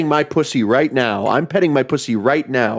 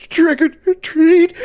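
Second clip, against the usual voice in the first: put-on very high, on-the-verge-of-tears little-kid voice; 5 dB louder than usual. Describing shy neighborhood kids trick-or-treating, imitating a kid near tears. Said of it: "they sound like they're on the verge of tears".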